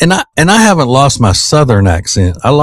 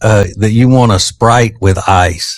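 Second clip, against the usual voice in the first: plain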